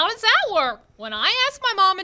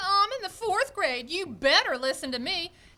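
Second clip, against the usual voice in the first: plain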